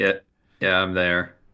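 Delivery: sounding unthrilled and unenthused. A character, asked if he's there, answers the others, unenthused. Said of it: "You sound thrilled".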